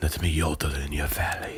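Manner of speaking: low, soft beer commercial spokesman voice. Showing how a line should be said to sound right: Dos Equis guy impression. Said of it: "You got to say it like the Dos Equis guy".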